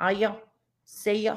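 put-on Manchester accent. Recalling moving to Manchester and how everyone talked there, imitating Manchester accent. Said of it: "when I moved to Manchester, it was totally different".

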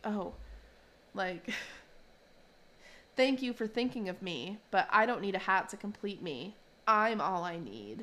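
very alarming, concerning, worrying voice. Speaker recounts Bob offering Louise a hat; imitating Louise's concerning voice. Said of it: "in like kind of a very concerning voice".

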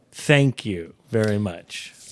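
ironic tone. Thanking someone for a joke gift, sarcastic.

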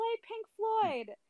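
very high, loud yelled call. Retelling shouting a request to a cover band at a bar: imitating own past yell. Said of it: "I just yelled, yelled out".

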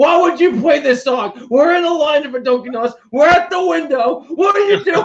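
mock yelling rant, very high-pitched and shrill. Retelling how mom shut off the radio and yelled at dad, imitating her yelling. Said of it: "starts yelling at my dad".

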